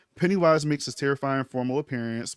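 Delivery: normal talking voice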